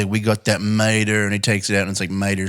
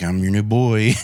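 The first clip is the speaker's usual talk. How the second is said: put-on deeper, creepy kid voice. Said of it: "a deeper voice when I do it".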